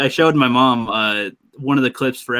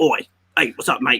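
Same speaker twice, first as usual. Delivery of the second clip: funny put-on Australian accent. Imitating the other speaker's voice for the tomato: mock australian accent. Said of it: "your voice for the tomato was pretty funny".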